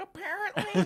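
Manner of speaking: put-on very high-pitched, tiny little-kid voice. Telling others how you keep saying one word, in an Apparently Kid voice. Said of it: "like that little kid's like".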